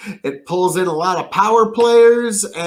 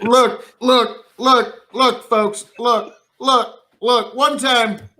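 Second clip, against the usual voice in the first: halting speechmaker voice, stalling and restarting; 4 semitones higher than usual. Told to use Joe Biden's voice instead, the speaker launches into a Joe Biden impression. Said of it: "Do that with Joe Biden's voice".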